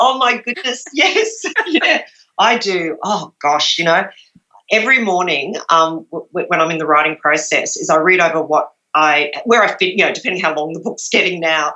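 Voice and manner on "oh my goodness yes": talking through laughter with raised pitch. Answering whether they do more than one draft: laughing while talking. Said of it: "sorry, I'm laughing".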